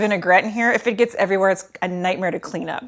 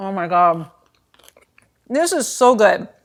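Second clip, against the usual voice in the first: mouth full while speaking. Tasting the salad just made, talking with mouth full. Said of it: "talk with my mouth full".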